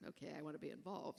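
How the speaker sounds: normal talking voice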